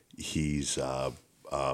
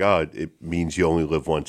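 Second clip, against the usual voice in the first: ordinary delivery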